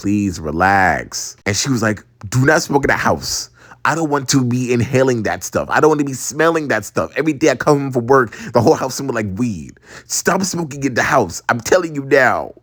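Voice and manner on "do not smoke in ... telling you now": ordinary talk, nothing marked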